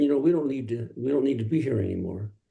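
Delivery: ordinary delivery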